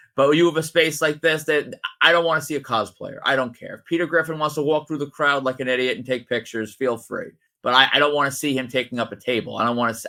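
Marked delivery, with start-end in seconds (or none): none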